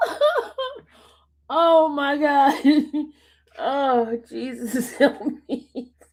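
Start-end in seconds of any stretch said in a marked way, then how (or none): 4.3-5.9 laughing plea that breaks off. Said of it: "know why I'm laughing".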